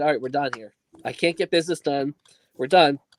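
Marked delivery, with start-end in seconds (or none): none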